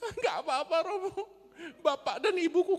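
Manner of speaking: put-on crying child's voice, pitched very high. Acting out a student answering why their grades are bad: imitating a crying student. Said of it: "Kenapa nangis?".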